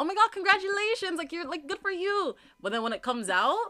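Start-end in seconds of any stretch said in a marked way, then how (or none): 0.0-2.4 effusive, excited, high-pitched gushing. Showing how the congratulation sounds in one's mind: imitating an excited congrats. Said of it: "in my mind, I sound like".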